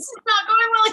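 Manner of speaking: high, loud startled yell.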